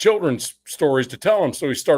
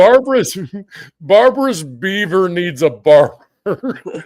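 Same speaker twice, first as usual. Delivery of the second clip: loud, slow, stifling laughter, fighting back giggles; 4 semitones higher, 6 dB louder than usual. Saying a favorite book title while trying not to laugh. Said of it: "I'm gonna try to say this without laughing".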